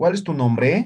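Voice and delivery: marked rising question intonation on nombre. Showing that spanish questions are intoned: rising question intonation on nombre. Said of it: "entonamos, ¿no ve? ... Hay entonación".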